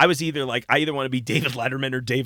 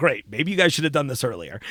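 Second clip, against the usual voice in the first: normal talking voice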